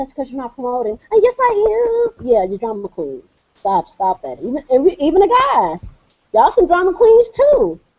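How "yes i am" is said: acted-out high, drawn-out, whiny crybaby voice. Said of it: "whine like little babies".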